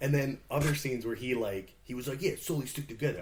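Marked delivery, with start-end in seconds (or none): 2.2-3.2 put-on Brooklyn accent, faster. Mimicking an actor whose accent jumped between scenes, imitating a Brooklyn accent. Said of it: ""Are you are you from Brooklyn or Australia?"".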